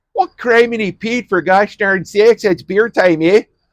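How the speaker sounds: very high-pitched, put-on Wisconsin accent. Introducing a beer, in a Wisconsin accent. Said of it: "I've thrown on a Wisconsin accent".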